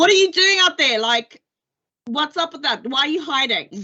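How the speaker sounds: very high-pitched, shrill shout. Calling out to people hiding out there in the distance, shouting. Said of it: "aim a bow in their direction and shout out to them".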